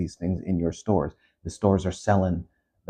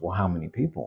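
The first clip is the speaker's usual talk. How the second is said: excited, eager, keen delivery; 4 dB quieter than usual. Retelling a show scene where Tom hears about layoffs, mock-excited as Tom. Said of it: "And he's like excited".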